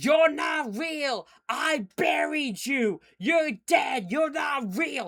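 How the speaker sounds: mock panicked screaming, high, drawn-out, over and over. Retelling a match scene where Kane is freaked out: imitating Kane screaming.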